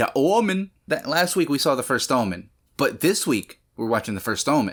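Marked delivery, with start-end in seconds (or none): 0.0-0.7 high-pitched, put-on Cajun accent. Speaker demonstrates their new vocal stim in a cajun accent. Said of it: "saying the Omen in a Cajun accent".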